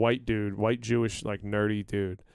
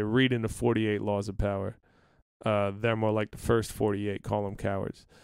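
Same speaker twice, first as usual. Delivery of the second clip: ordinary talk, nothing marked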